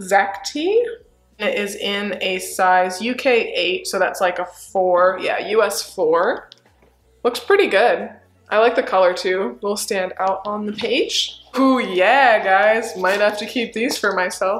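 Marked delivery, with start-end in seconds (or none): 13.0-14.6 heavy, pointed sarcasm, dripping with irony. Looking at a pair of shorts from a haul: very sarcastic. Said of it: "she said very sarcastically".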